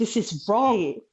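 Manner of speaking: acted-out scream. Recounting a birth where nobody stopped it, retelling her scream. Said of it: "And I'm screaming".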